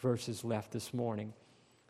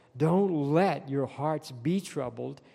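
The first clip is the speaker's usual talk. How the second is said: let stressed and lifted in a slow tune. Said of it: "underline that word let".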